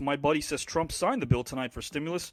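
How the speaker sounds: ordinary delivery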